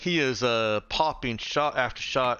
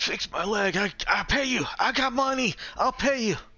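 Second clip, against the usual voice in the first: very high screaming that sounds in pain; 10 semitones higher than usual. After being offered medical treatment, a character screams at Marcus: screaming at someone. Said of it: "he he starts screaming at Marcus".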